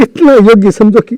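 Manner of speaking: tearful voice. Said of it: "तुम मत रोइए".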